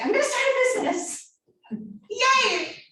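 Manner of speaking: gushing thrilled excitement, high-pitched and loud.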